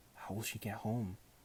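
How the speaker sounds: plain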